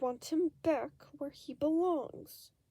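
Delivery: words forced out through clenched, gritted teeth. Pressed by Remus's questions, Deceit answers, spat through gritted teeth. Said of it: "he spat through gritted teeth".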